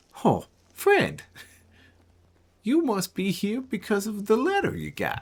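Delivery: very high, sing-song, swooping cook voice. Voicing a cook with a cleaver greeting the party: grinning cleaver-wielding cook character. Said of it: "biggest shit bird grin steps through the door".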